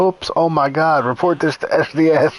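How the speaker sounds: heavy, dry sarcasm in a slow drawl. Retelling how Gabe reacted when the game glitched: imitating Gabe's sarcastic tone. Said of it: "You could hear the sarcasm in his voice".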